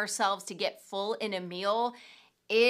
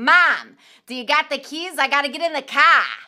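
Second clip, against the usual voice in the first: put-on very loud, high little-kid voice with Boston accent; 5 semitones higher, 11 dB louder than usual. A mother recalls her young son after speech therapy: imitating Anthony's Boston accent. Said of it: "they sort of worked in a Boston accent into him".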